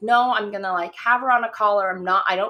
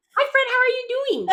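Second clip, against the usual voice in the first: put-on excited dog voice, higher. Voicing the dog Ritz spotting a friend: voicing Ritz, excited to see a friend. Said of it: "if she's sassy or she sees her friend".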